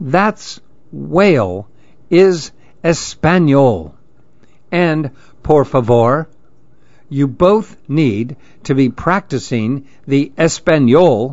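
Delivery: ordinary delivery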